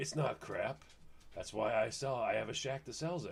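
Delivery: low, quiet, gravelly voice. Retelling what a voice behind him said at a shack: deep raspy Clint Eastwood voice. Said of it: "Then you hear this deep voice, raspy voice".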